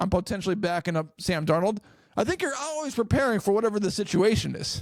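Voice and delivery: plain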